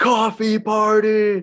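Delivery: put-on very high, loud, shrill scream. Speaker recounting a stranger who followed them, retelling a stranger's scream. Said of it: "he just screams".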